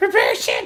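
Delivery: loud voice, cracking and breaking mid-phrase. Retelling a movie scene on the comm: imitating a voice breaking. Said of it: "and his voice breaks at first".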